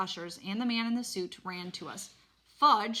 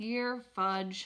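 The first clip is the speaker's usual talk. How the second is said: plain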